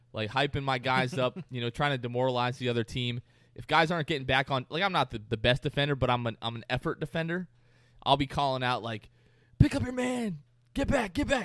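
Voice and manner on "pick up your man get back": put-on, very high, drawn-out shouting. A player describes calling out to teammates on defense, re-enacting yelling. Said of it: "I'll be yelling at everybody".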